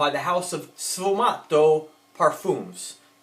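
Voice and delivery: very slow, drawn-out put-on Italian accent. Naming a perfume house in a fragrance review: Italian accent. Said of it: "Like my Italian accent, how I said that".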